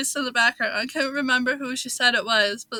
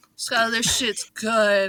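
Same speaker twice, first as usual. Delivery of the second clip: put-on talking with mouth full; 2 semitones lower than usual. Retelling a sister's phone call about the pie: imitating talking with mouth full. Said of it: "mouthful of this pie".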